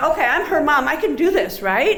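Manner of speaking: plain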